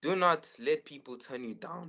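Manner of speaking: voice breaking and cracking mid-line. Answering a question about advice for young artists, voice cracking. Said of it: "Okay, voice crack".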